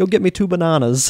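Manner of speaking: really bad fake Australian accent, pitched high. Retelling what the listener said while they stood together: really awful australian accent. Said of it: "you say in this really awful Australian accent".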